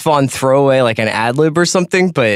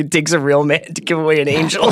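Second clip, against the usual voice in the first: plain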